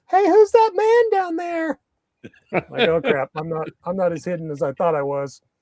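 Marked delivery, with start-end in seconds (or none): 0.2-1.8 put-on very high, loud little kid voice. Retelling a child spotting the speaker hidden below the viewpoint, six-year-old's voice. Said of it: "some six year old voice saying".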